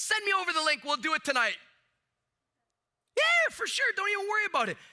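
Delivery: gushing, overeager, overexcited high sing-song voice. Speaker telling a sales audience acts out a prospect: imitating an overly excited prospect. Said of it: "that's an overly excited state".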